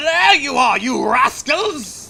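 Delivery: high pirate captain character voice. Reading a game boss's line aloud: Captain Hook voice. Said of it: "I gotta do, um, Captain Hook's voice".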